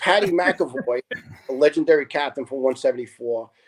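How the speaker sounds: ordinary delivery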